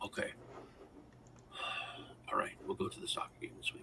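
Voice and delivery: play-acted very quiet, hushed, dead-serious whisper. Retelling the father's reply to a soccer game invitation: imitating someone all serious. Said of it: "It was, like, all serious".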